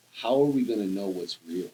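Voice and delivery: normal talking voice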